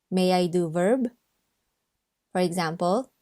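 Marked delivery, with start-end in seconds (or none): none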